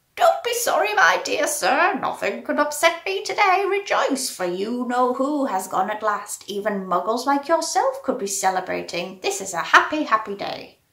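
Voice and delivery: put-on squeaky elderly man voice. Narrator reading a story, an old man speaks to Mister Dursley in a squeaky voice. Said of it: "he said in a squeaky voice".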